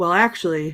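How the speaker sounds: ordinary talk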